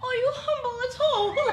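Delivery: high, slow, taunting put-on British accent. Retelling how she repeated a man's question back to him, mocking imitation. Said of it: "I'm mocking him".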